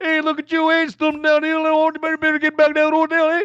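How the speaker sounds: imitated Newfoundland accent. Retelling how police mocked him from a cruiser, imitating Newfoundland accent. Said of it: "That's how they talk".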